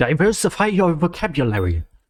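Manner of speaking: angry, cross, scolding voice. The speaker imagines what their english teacher would say, mock-angry teacher. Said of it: "My English teacher would be very mad at me".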